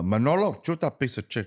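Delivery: put-on choppy, chopped-up delivery in a Cuban accent. Recalling his first impression, quoting Scarface in a Tony Montana choppy Cuban accent. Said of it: "that Cuban choppy accent".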